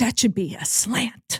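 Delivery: under-the-breath, hushed, muttered whispered grumble. Retelling what mom said during football, imitating her whispering. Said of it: "she'd be whispering it".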